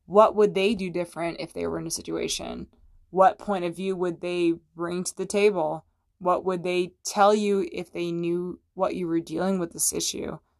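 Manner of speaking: ordinary talk, nothing marked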